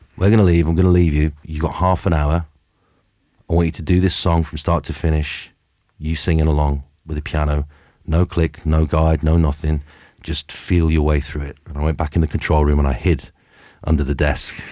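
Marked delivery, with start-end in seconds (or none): none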